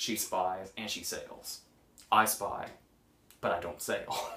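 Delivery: play-acted, hushed, flat, matter-of-fact deadpan. Recalling an actor's line from a film scene, retelling a deadpan line read. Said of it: "practically like he was just saying like a useful piece of information".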